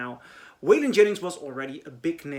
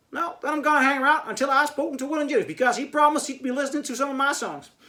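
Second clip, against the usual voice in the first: very high attempted Southern accent with Dutch accent; 11 semitones higher, 4 dB louder than usual. Retelling a Dutch guy refusing to leave the record studio, Dutch guy's attempted Southern accent. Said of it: "a Dutch guy trying to do a Southern uh, uh, American accent".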